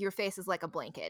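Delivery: plain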